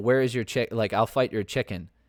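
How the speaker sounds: ordinary delivery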